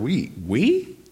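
heavy emphasis on the word we. Reading a bible verse aloud and dwelling on one word: stress on we. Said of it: "I just want to emphasize that word".

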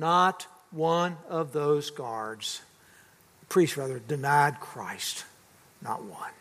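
low, slow voice cracking with emotion. Retelling what the guard said, retelling voice cracking with emotion. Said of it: "in a voice cracking with emotion".

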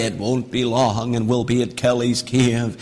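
low, hushed, spooky, eerie storyteller tone. Father retelling how he spooked his kids on the way to a cave, eerie spooky voice. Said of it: "speaking to them in an eerie voice".

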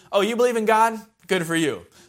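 laid-on, swooping, put-on sarcastic tone. Paraphrasing a Bible verse aloud: put-on sarcastic tone. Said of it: "A little bit sarcastic there".

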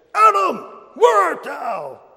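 acted, very high, shrill, swooping, nasty, attacking voice. Retelling how one man in the rows read the line, imitating an attacking, nasty voice. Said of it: "attacking, nasty kind of a voice".

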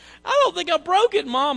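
mock very high, loud tearful crying wail. Telling how they came home after a school investigation, imitating their past self crying to Mom. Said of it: "I get home crying".

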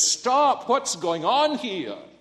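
play-acted, booming, high stentorian father voice shout. Retelling a father running in on shrieking, shouting children: stentorian shout. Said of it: "in a stentorian voice he says".

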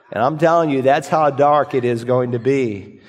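ordinary delivery

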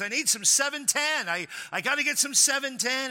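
frantic, flustered, urgent, high-pitched pleading. Telling a joke about a man rushing into a service station, imitating a frantic man. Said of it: "He gets out of his car kind of frantic".

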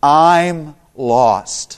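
very slow, deliberate, each word drawn out. Retelling trying to bridge a language gap at a bakery, saying it very slowly. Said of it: "And so very slowly I said".

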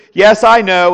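mock, very loud, heavy, booming sarcasm. Retelling what another person said back: imitating a sarcastic reply. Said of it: "he says it sarcastically".

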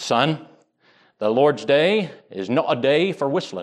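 bad, rough put-on Scottish accent. Quoting a ruling elder who stopped a young man walking along, bad Scottish accent. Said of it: "this is my best Scottish".

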